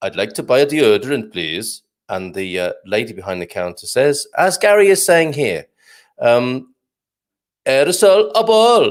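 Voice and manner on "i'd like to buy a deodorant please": put-on Swedish accent. Telling a joke, voicing the Swedish customer at a shop counter, Swedish accent. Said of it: "back to the Swedish".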